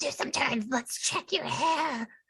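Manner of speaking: eerie, sinister whisper. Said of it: "whisper in her creepy serial killer voice".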